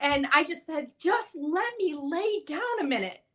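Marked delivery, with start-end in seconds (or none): 1.0-3.1 stunned, shell-shocked, dazed voice, pitched up. Retelling asking to lie down for a minute, replaying being in shock. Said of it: "obviously I'm in shock".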